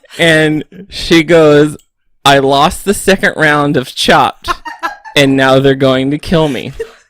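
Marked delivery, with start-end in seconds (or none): none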